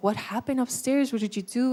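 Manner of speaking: mock tone broken up by hysterical laughing. The speaker quotes his laughing dad questioning him, imitating dad laughing while talking. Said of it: "he starts laughing hysterically".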